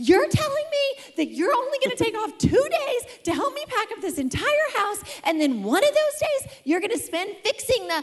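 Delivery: very high-pitched scream at full tilt, ranting. Recounting a past argument, acting out yelling. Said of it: "And so I just start yelling".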